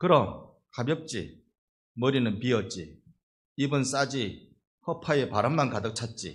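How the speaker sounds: curt, loud, blunt, acted-out delivery. Telling a joke, imitating a grandmother's curt reply: imitating a blunt, curt grandmother. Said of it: "할머니가 퉁명스럽게 이렇게 말하대요".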